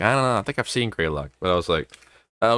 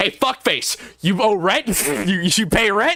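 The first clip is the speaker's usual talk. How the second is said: angry, very high-pitched, pissed-off voice; 12 semitones higher than usual. Retelling a meme where a man with a bat confronts a creepy figure: imitating an angry man. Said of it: "but he's pissed off".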